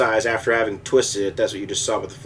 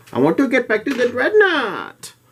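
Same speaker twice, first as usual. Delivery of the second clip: put-on very high, swooping, bratty spoiled kid voice; 13 semitones higher, 4 dB louder than usual. Rejecting the option of redoing the work, stating his wish in a spoiled childish voice. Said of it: "I said it in the spoiled childish voice".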